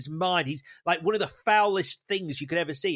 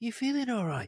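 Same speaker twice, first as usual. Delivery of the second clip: soft, higher, passive-aggressive, menacing, sinister caring tone; 6 semitones higher, 5 dB quieter than usual. Repeating a clue line for next week, mock sinister, passive-aggressive concern. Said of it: "passive aggressive, sinister, but caring".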